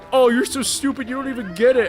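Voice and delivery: derisive, mocking manner. Retelling a dream where the pizzeria manager mocked them: imitating a mocking manager. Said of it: "kept making fun of me".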